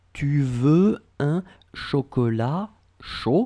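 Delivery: pitch climbs up on final word "chaud". Teaching French pronunciation, demonstrating a question with a raised voice. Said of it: "you raise the voice".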